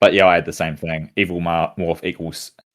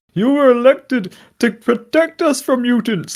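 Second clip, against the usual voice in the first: very high shrill raised yell; 5 dB louder than usual. Describing a comedian's crowd gag, imitating a heckler yelling from the crowd. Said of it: "pretending to be someone yelling out from the crowd".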